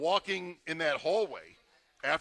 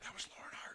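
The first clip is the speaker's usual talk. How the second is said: whispered, low, breathy and secretive. Retelling a remark made to someone else in the media: retelling a whisper. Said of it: "whispering to somebody else in the media".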